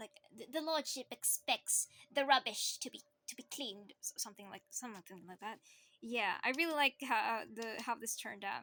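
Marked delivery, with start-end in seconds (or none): 0.5-3.9 nasal, flat, alien-like character voice. Showing a character voice made for a role: nasal, alien-like character voice. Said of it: "I made it like nasally, like it's almost like an alien character voice".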